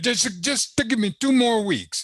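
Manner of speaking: put-on very high voice with a horrible Italian accent. Speaker quotes Michelangelo, horrible Italian accent as Michelangelo. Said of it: "horrible Italian accent of English".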